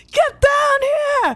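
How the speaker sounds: acted, in-character shouting. Yelling in character to an ally above before a roar attack: in-character yell. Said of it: "I'm gonna yell out".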